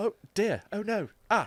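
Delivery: high, fussy robot butler voice. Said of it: "like, a guy in a C three P O suit".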